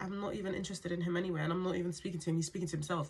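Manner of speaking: ordinary delivery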